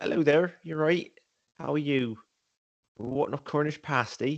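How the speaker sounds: Bristolian accent, near Cornish. Showing others what a Bristolian accent sounds like, Bristolian accent. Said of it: "Bristolian's quite close. So it's like".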